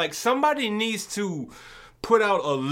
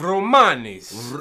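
"romanis" pronounced with an Italian accent; 6 semitones lower, 5 dB louder than usual. Discussing a slur, naming the people: italian accent on romanis. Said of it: "Did you just put an Italian accent on the".

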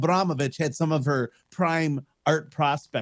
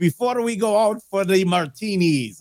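put-on Italian accent with a higher-pitched voice; 5 semitones higher, 4 dB louder than usual. Retelling an outing, the speaker quotes a companion: Leo Zagami Italian accent. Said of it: "that's my Italian accent right there".

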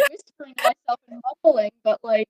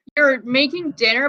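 ordinary talk, nothing marked

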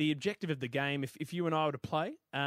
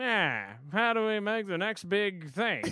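put-on old-timey man voice, slow, pitched-up drawl; 5 semitones higher, 4 dB louder than usual. Imitating someone in the fifties with a pipe inventing toys: imitating a 1950s pipe-smoking man. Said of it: "I'm sorry why it always goes to that voice".

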